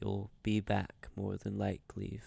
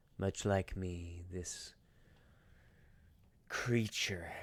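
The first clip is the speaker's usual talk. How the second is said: character voice full of malice; 2 semitones lower than usual. Voicing a creature talking about another creature: voicing a character speaking with malice. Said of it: "he says it with so much malice".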